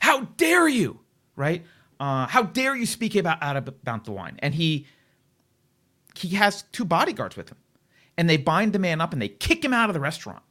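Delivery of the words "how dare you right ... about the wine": put-on scream, higher, louder, slower. Retelling the waiter screaming at a man in the restaurant, imitating someone screaming. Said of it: "he starts screaming at the guy".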